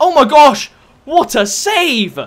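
high-pitched, loud, belted-out amazed exclamation.

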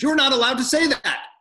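frantic, very high, loud. Reading aloud, quoting a guard who came running: imitating a frantic guard. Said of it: "a frantic elderly guard came running up".

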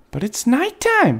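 small, high, squeaking bat voice. A young bat answers the other bats: squeaking. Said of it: "Stella Luna squeaked".

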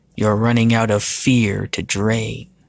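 ordinary delivery

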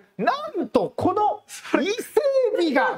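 very high, drawn-out TV-shopping sales voice. Showing how his voice tone rises on shopping programs: raised TV-shopping voice. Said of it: "通販番組で僕ちょっと声のトーン上がるんです".

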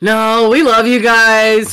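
loud, very slow, drawn-out, insincere and unconvincing. Mimicking another speaker's thank-you: imitating an unconvincing thank-you. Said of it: "It was one of those, like".

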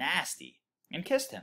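ordinary delivery

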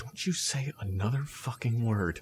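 hushed, very low and quiet voice. Recounting how he was pointed at while standing on the line, really quiet. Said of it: "it says really quietly".

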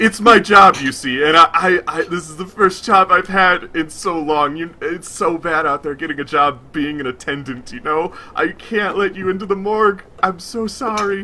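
teary, tearful, gushing delivery. Game master voicing the records keeper, who tears up: tearful records keeper voice. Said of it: ""You are taken down some steps by [name], the records keeper".

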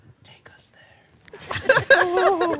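very high, very loud stage whisper. Playing a character who leans down to someone: whispering in character. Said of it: "I whisper in that sort of way".

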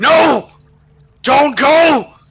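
piercing all-out scream, very high and very loud. Describing waking up with a jolt, the speaker acts out their own scream. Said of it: "and I'm just screaming".

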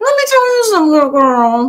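words pushed out through the teeth. Showing how an actress talks through her teeth: Rosie Perez voice. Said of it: "That's how she talk like this to her teeth".

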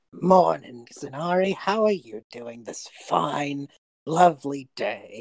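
slow words pushed through clenched teeth. A character, arms shaking from holding a box, greets Zanari through gritted teeth. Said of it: "you could just see him talking through, like, the gritted teeth".

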